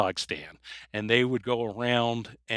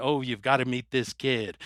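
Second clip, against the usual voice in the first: put-on phony British accent. Speaker retells a ten-year-old's prank call posing as an agent, in a phony British accent. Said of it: "giving like a phony British accent".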